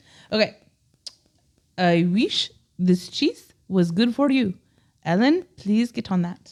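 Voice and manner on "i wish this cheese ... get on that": put-on Indian accent. Trying a Pepe Le Pew voice that slides into: put-on Indian accent. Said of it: "I just turned into Indian".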